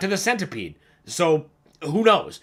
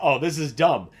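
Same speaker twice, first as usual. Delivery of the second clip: mock laughing while talking. Retelling a first reaction to a silly game line: retelling laughing while talking. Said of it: "Just laughing like".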